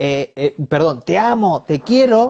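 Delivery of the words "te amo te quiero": cross, angry tone, pitched up and slow. Showing that a dog hears tone rather than words: angry tone. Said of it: "con tono enojado".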